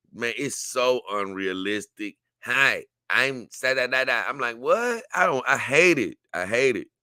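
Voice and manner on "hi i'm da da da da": artificial robotic assistant-style machine voice. Complaining about AI assistants and mocking how they talk, Siri robotic voice. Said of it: "that Siri robotic voice".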